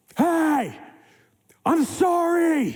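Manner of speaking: mock heated, very high-pitched angry voice. Retelling apologizing to a driver who pulled up alongside: reenacting own angry voice. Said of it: "all I could muster in angry voice is".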